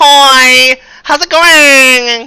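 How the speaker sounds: very high, very loud, very slow dopey voice. Showing how a beautiful character walks up and greets people: super stupid voice. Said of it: "I really want to make his voice be super stupid".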